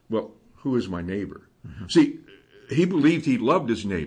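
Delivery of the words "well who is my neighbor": put-on smugness, lower and quieter. Retelling how a man justifying himself before the people asked, mock-smug question. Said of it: "he just smugly asks".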